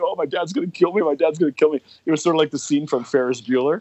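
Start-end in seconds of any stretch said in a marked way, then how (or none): 0.0-1.8 frantic, high, panicked, repeating the same words. Retelling a friend's words after the car got stuck: imitating a panicked friend. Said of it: "he was shitting his pants 'cause he's like".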